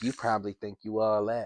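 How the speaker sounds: aggressive, disrespectful, pushy flirting tone. Retelling a woman's flirting at an event: imitating aggressive flirting. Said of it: "an aggressive, like, disrespectful way".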